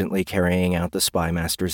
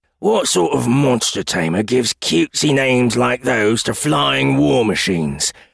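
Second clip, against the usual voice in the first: high-pitched groaning full of disgust; 5 semitones higher, 4 dB louder than usual. Narrating Hook's reply to Bandit, groaning. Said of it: "Hook groaned".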